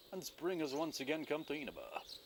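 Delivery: sudden news reporter announcement tone. Reading a game's text aloud, the speaker narrates a scene change in a news reporter voice. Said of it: "Sounded like a news reporter or something".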